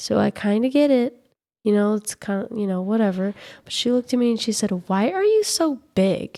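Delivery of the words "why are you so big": high, slow, sassy child voice, acted out. Retelling what a child said to her: imitating a child asking with attitude. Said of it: "With attitude".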